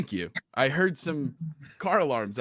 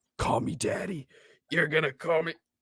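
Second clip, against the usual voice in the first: stage whisper, very close; 4 semitones higher than usual. Player's character subduing a person on the ground, whispering in his ear. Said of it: "whispering in his ear".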